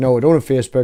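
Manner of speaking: normal talking voice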